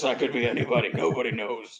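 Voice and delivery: deep, low, gruff growling voice. Showing how a changed voice hides who is speaking, gruff Batman voice. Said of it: "And I go like this".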